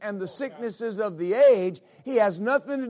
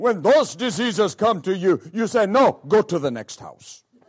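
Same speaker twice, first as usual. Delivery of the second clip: very deep, raised pulpit preaching voice; 2 semitones lower, 6 dB louder than usual. Retelling a sermon, the speaker quotes a Ghanaian pastor: imitating Pastor Eddie Quay's deep voice. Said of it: "the way he talks in a very deep voice".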